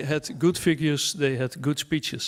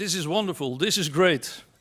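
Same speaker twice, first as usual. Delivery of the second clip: ordinary talk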